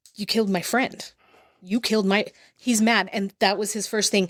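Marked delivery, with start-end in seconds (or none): 0.2-2.3 mock crying while speaking. Retelling what her son Logan said, imitating someone crying. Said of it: "crying like".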